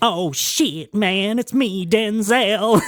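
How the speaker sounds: drawn out slowly, pitched a bit high. Retelling someone pushed into an impression: Denzel Washington impression. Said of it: "I can do Denzel".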